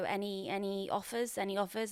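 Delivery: ordinary delivery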